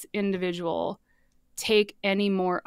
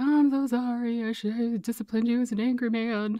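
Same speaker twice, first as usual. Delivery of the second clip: mock tearful delivery, higher pitch; 4 semitones higher than usual. Retelling a father's tearful apology: mocking imitation of father's apology. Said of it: "I know that this is coming across a bit mocking".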